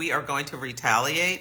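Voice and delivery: ordinary talk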